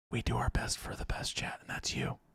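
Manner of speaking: soft, breathy, hushed, barely voiced whisper. A streamer talks to chat about their painting stream: whispering. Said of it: "Why are you whispering?".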